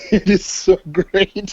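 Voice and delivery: slow talk breaking into laughter. Recalling a funny upcoming comic, laughing while talking. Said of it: "it's making me laugh".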